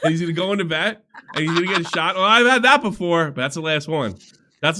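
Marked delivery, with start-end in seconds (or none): 2.2-3.3 high, loud put-on dog voice. Acting out the dog Sammy getting a shot: Sammy impression. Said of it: "Your Sammy impression".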